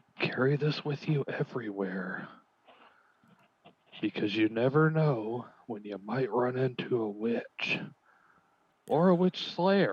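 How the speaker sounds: quiet whispered voice. Leaning in close in character while handing over a card: whispering in character. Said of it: "lean in real close and whisper".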